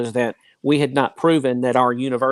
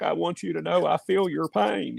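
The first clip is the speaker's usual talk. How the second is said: put-on gravelly, creaky voice; 5 semitones higher, 5 dB quieter than usual. Talking about how impressions sound, doing a line in Bill Clinton voice. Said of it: "Kind of like Bill Clinton".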